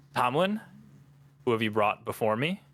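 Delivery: disembodied voice seeming to come from nowhere. Voicing a hooded figure who questions the arrivals: sourceless disembodied voice. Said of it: "almost like a sourceless voice just saying".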